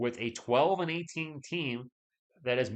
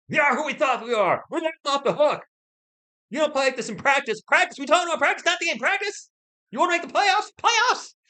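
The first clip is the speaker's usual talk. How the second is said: very high, raised, clichéd ranting voice; 13 semitones higher, 9 dB louder than usual. Joking about giving a speech, doing a cliched coach rant. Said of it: "I'd start doing my, my, my, my, my speech".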